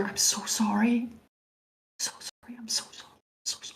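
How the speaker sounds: barely voiced, very quiet, breathy, hushed whisper. Player's character looking at another character, whispering. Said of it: "just kind of whisper".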